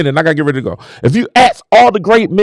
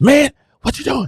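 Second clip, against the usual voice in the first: high-pitched scolding under the breath, half-whispered; 5 semitones higher, 4 dB quieter than usual. Retelling how Terrence Thomas scolded over the phone: imitating a half-whispered scolding. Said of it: "fussing at you, but he whispering at you".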